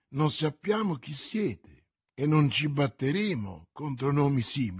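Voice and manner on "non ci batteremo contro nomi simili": plain reading voice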